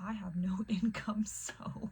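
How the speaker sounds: whispered, barely held-in laugh. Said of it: "had to hold in a laugh".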